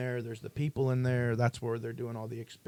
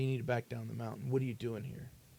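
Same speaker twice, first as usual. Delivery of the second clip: stern, no-nonsense voice; 4 dB quieter than usual. Retelling how a man stopped them near the base: imitating someone stern. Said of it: "he was very stern".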